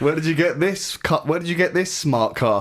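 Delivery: condescending, high, cutting sarcastic lecturing tone. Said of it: "underlying tone of cutting sarcasm".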